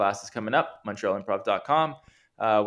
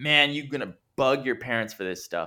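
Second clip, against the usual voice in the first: mock hard-sell ad voice, higher pitch; 3 semitones higher than usual. Showing how kids' ads can't be subtle: imitating a hard-sell kids ad.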